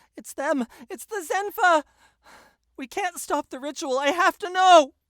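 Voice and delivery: very high, very loud shouted cry. Voicing a character as combat begins in darkness: Lady Lenora yelling. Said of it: "Lady Lenora yells out".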